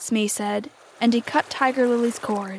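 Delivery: ordinary delivery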